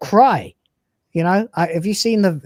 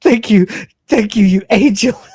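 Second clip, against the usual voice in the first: high, loud sobbing through tears; 5 semitones higher, 6 dB louder than usual. Speaker retells a man bursting into tears while thanking a woman: imitating someone crying. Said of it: "And he starts just bursts into tears".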